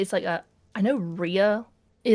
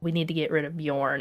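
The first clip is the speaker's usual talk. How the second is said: hushed mutter, lower and quieter; 5 semitones lower, 4 dB quieter than usual. Retelling a character's private remark, muttered under her breath. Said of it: "she's like kind of just under her breath".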